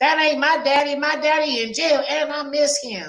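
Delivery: put-on very high, tiny little girl voice. Acting out a mother's little daughter answering her, use a little child's voice. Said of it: "her little voice hella funny".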